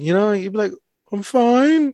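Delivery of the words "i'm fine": put-on talking like a little kid, small childlike voice. Describing a man who talked almost like a little kid, imitating his little-kid voice. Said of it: "That's what he would just sound like that".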